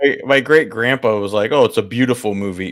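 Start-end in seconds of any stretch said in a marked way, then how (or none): 1.5-2.7 acted-out sarcastic tone. Recalling a great-grandpa's comment on a film, retelling a sarcastic remark. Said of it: "being sarcastic".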